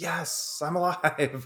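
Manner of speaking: high, relieved, joyful outburst.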